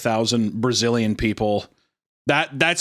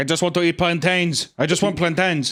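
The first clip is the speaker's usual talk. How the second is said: bad, fake Brazilian accent, pitched up; 6 semitones higher than usual. Retelling a joke story about someone turned into a Brazilian human: put-on Brazilian accent. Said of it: "I don't know enough about Brazil to know if that's a good accent".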